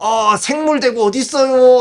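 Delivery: put-on high, loud drunken man's voice.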